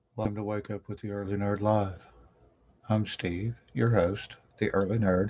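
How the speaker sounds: soft-spoken, hushed, quiet host voice. Host opening his live morning show, trying not to wake anyone; talking quietly. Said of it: "I'm talking quietly".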